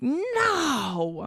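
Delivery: high, slow, stretched-out mock fussy whine. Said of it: "people are like".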